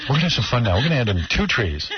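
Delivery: put-on soft, imitated whisper. Imitating a painter's whispering way of talking on his show: imitating the painter's whispering. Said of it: "like that whispering".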